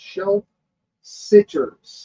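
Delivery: very slow, drawn-out words. Reading out what Amy Waters says, say the last words very slowly. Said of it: "I'm going to say this very slowly".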